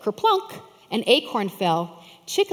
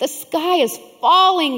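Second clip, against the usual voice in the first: loud high-pitched crying out; 7 semitones higher, 6 dB louder than usual. A chicken answers the fox on the path; cried out. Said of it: "cried Chicken Little".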